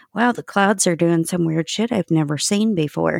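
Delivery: ordinary delivery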